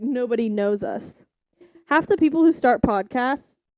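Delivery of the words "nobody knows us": ordinary delivery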